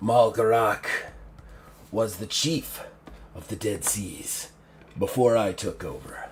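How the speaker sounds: demonic character voice. A role-player speaking about Malgarak, still in the demon's voice. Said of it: "I was still talking in the demon's voice there".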